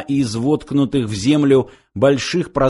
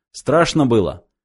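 ordinary delivery

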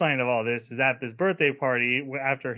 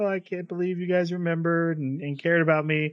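fake crying in a teary voice; 4 semitones higher than usual. Retelling a character's reaction at a surprise party: imitating someone fake crying. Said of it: "he pretends to cry".

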